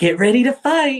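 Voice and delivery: very high, loud, doll-like voice. Retelling a game in the park, the speaker quotes Adrian doing a Barbie voice. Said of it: "in like her best Barbie voice".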